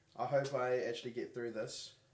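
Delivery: ordinary talk, nothing marked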